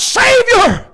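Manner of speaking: high screamed cry. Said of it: "Somebody would scream out".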